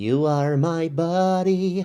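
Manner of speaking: put-on very slow, drawn-out childlike doll voice. Describing the voice acting in a movie review: childlike Buddy doll voice. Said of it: "that kind of voice".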